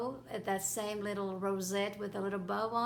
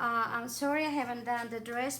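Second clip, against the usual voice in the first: normal talking voice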